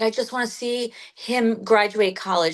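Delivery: normal talking voice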